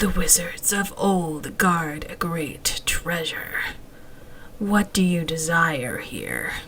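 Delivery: soft, raspy, breathed-out stone-creature voice. Storyteller voices a stone creature addressing the players, raspy breathy stone-creature voice. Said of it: "you hear this raspy voice just kind of almost breathe out of it".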